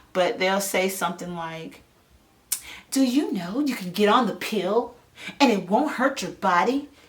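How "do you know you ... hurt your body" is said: salesy tv commercial announcer voice. Making fun of tv commercials and how they talk: imitating a tv commercial. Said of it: "I love imitating them".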